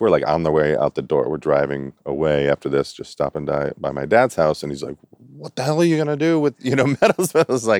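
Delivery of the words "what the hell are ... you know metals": put-on very high, upset outburst. Retelling what their dad said while stopping by his house, imitating an upset dad. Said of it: "like he was like upset".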